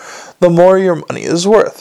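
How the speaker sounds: ordinary delivery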